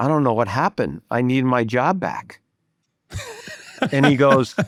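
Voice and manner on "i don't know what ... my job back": ordinary talk, nothing marked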